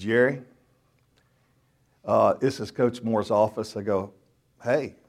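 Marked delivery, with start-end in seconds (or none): 0.0-3.8 put-on somber, serious, grave voice. Speaker retelling a call from a coach's assistant, imitating a somber, serious voice. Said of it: "with this somber, serious voice, like somebody had just died".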